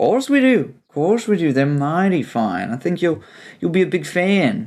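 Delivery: high-pitched attempted New Zealand Kiwi accent. Answering a guest who asks whether they have a library, in an attempted Kiwi accent. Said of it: "This is my attempt at a Kiwi accent".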